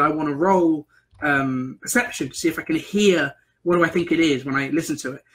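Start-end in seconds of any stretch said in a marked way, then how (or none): none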